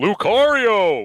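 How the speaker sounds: big, loud announcer-style delivery. Calling out the name Lucario, doing a Brawl announcer voice. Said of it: "my best impression of the Brawl announcer".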